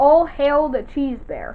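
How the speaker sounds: ordinary talk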